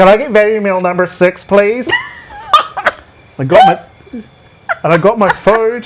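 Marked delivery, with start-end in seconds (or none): 0.0-1.9 fake, put-on American accent. Ordering food from a woman who couldn't understand them, in a fake American accent. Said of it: "I get rewarded by speaking in this way".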